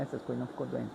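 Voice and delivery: very soft hushed voice.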